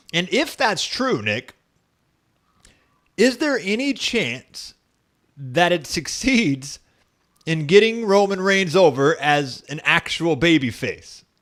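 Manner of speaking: dripping, heavy sarcasm. Asking the other speaker a question: very sarcastic. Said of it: "making that very sarcastic".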